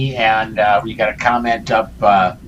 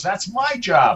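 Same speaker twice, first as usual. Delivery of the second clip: high yell from a distance; 9 semitones higher than usual. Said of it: "As Susan from the other room yells".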